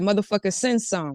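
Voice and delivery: ordinary delivery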